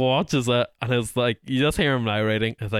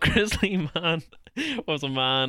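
talking through laughter; 3 semitones higher, 4 dB quieter than usual. Starting to explain who grizzly man was: laughing while talking. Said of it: "I don't know why I'm laughing".

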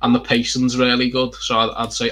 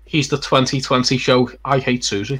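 ordinary talk, nothing marked

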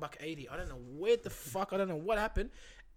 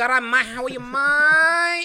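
very loud, high, mocking, clumsy, drawn-out mate; 7 semitones higher, 14 dB louder than usual. Joking with a friend about how new arrivals use slang, mocking newcomers saying mate. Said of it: "Like they try and say mate".

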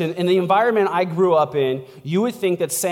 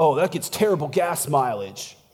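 mock passive-aggressive tone, lower pitch; 3 semitones lower, 3 dB quieter than usual. Acting out an insecure person's reply to news of a new truck: imitating a passive-aggressive jab. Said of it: "they'll say things like passive-aggressive".

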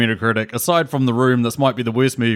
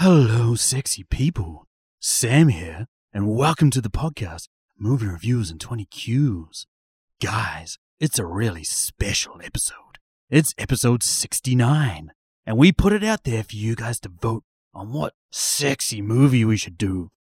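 put-on sultry, slow bedroom voice; 3 dB quieter than usual. Opening the podcast episode and greeting the listeners in a put-on bedroom voice. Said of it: "Is that your bedroom voice".

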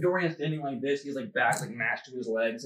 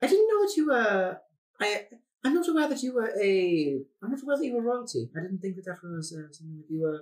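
put-on British creature voice, much higher; 8 semitones higher, 4 dB louder than usual. In a tabletop roleplay, a small tailed creature speaks up: Thimble's British voice. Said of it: "I don't like [name] British. ... He has taken out a notepad. He's behind [name], like, in his shadow. Like, if [name] is standing like this, he's, like, back, like, mashed to his legs. His tail's, like, up here. He's taking out a notepad".

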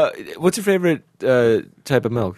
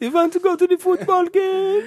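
very high, camp, effeminate German accent. Riffing on voices with a co-host, playing a german bro: really high effeminate german. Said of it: "really high effeminate German".

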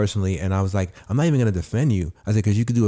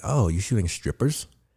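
mock-disapproving, negative put-on tone; 3 dB quieter than usual. Retelling what a woman he dated said about his video, imitating her negative tone. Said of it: "she said it in such a negative way".

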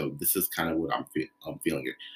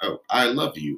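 mock stiff, mechanical robotic reading, loud and high; 8 semitones higher, 7 dB louder than usual. Speaker showing how some actors deliver the line, robotic line reading. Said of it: "actors can sometimes do that robotic reading".

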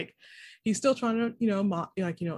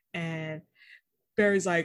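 usual speaking voice

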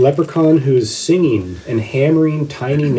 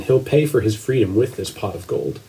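ordinary delivery

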